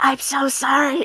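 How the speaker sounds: hushed, soft, high half-whisper. Playing a character who apologizes while walking away: half-whispering in character. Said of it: "She's gonna whisper".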